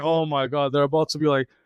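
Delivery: ordinary talk, nothing marked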